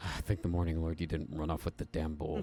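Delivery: words spoken on a sigh. Voicing a character as a player comes back with the bowl: sighing. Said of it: "he just sighs and goes".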